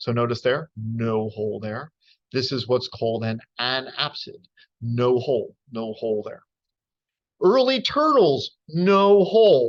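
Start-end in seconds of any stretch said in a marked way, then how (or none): 7.4-9.7 slow, swooping, angry and sarcastic tone. A speaker arguing against the geneticists' view of turtles, in a sarcastic, angry voice. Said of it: "saying this in this, you know, sarcastic, angry voice".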